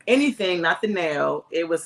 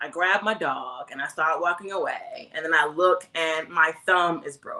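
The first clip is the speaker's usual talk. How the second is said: plain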